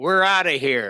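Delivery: put-on loud childlike outburst. Retelling how a small boy called out during a theater show: retelling a loud outburst. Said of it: "in a loud voice in the middle of Shays Theater".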